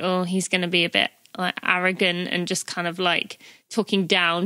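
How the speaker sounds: usual speaking voice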